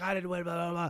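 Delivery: loud, upset, frantic, freaked-out outburst. Retelling a friend freaking out at a bar: imitating someone freaking out. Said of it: "Steph was freaking out".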